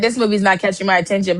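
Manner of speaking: ordinary delivery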